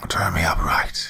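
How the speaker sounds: spitting, spat-out whisper. Reading a horror story aloud, voicing a severed head: whispering and spitting. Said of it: "it whispered and spat".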